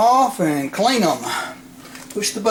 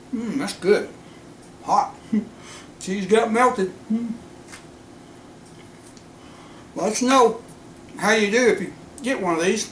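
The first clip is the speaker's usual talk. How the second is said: speaking through a full mouth, higher; 4 semitones higher, 3 dB quieter than usual. Tasting the food just cooked for viewers, talking with mouth full. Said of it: "mouth's still full".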